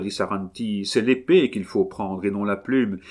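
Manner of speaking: ordinary delivery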